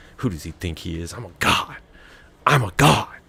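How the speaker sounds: muttering in character voice. As Baron hangs his head and walks out, Baron mumbling under breath. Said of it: "you hear him mumbling under his breath".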